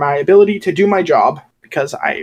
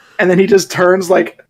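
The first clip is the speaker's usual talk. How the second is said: usual speaking voice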